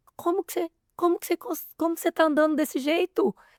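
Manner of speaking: acted stunned reaction. Retelling a client's reaction in a session, imitating someone in shock. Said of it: "ela ficou em choque".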